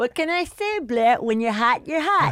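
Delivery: belted, high-pitched voice. Asked to do the voice for someone, performing a Cousin Jerry impression. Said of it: "do Cousin Jerry from Facts of Life".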